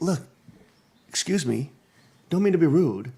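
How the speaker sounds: put-on light, slight British accent. Retelling what he told her, in a light british accent. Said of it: "with his little British accent".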